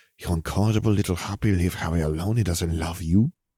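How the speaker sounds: usual speaking voice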